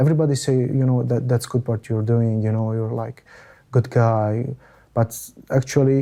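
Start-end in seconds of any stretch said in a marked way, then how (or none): none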